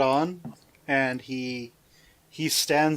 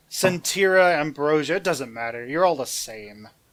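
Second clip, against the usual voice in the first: ordinary talk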